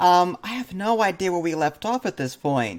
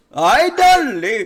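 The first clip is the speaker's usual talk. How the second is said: loud, high put-on Spanish accent, words stretched long; 6 semitones higher, 6 dB louder than usual. Repeating the imitated dad's line: mock Spanish accent. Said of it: "It's totally Spanish accent".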